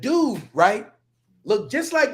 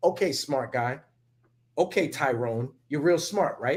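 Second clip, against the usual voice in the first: play-acted, patronizing, condescending, head-patting tone; 8 semitones lower, 6 dB quieter than usual. Imitating how others talk down with praise: imitating patronizing praise. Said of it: "That's how they, uh, pat you on the head".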